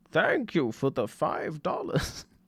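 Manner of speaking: put-on elderly man voice, slow, breathy and whispery. A viewer likes the old man voice the speaker uses: put-on old man voice. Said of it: "That's me trying to sound like the old man".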